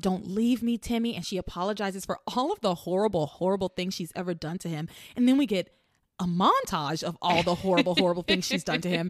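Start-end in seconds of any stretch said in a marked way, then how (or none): 0.0-1.1 mock crying, acted sobbing voice. Recapping a scene where she holds Timmy, imitating her crying. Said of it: "She cries".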